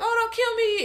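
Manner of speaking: high, slightly loud mock damsel pleading.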